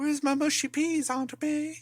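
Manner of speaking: very high, small, squeaky British orphan voice. Mocking how the actor sounds in everything: imitating Tom Holland as a British orphan. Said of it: "That's all he sounds like to me".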